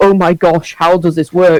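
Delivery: plain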